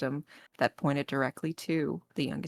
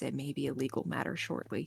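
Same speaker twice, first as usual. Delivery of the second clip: soft, kept-down voice; 2 semitones lower, 5 dB quieter than usual. Recounting a conversation, the speaker quotes a woman's warning, retelling a lowered voice. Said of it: "and she kind of lowers her voice".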